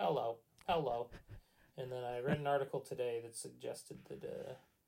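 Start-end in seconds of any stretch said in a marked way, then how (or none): 0.0-1.1 robotic voice. Describing the phone calls they get, imitating the callers: robot voice. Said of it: "robot voices going".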